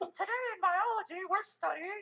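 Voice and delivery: very high, goofy teacher voice. Imitating a biology teacher whose voice doesn't fit his body: imitating Voorhees's voice. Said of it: "Voorhees would be like".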